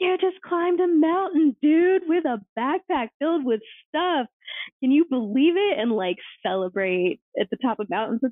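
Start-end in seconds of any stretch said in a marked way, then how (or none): 0.0-5.8 put-on, very high, shrieked celebratory scream. Retelling cheering on hikers at a mountain top: retelling screaming at people. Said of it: "screaming at people, like".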